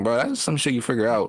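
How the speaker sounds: ordinary talk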